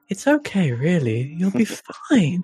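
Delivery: sinister, unsettling, creepy villain voice. Just praised for the voice, a speaker carries on the bit in a creepy antagonist voice. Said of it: "you've got your creepy antagonist voice down perfectly".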